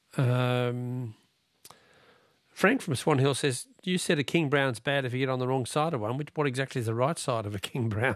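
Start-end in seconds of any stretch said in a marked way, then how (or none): none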